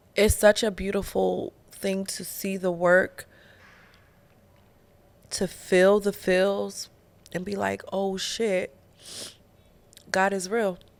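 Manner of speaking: tearful voice, crying while talking. Reflecting on where life came from and where it's going, crying while talking. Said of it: "now I'm crying".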